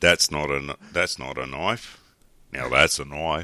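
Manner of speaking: put-on Australian accent. Answering a challenge to show an Australian accent: Australian accent. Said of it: "when I'm doing an Australian accent".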